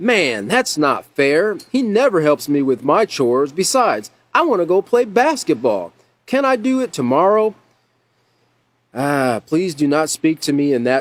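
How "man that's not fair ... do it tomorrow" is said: angry voice with pitch climbing higher. Reading a role-play scenario, the child answers a parent's chore request: angry tone. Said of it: "in an angry tone of voice".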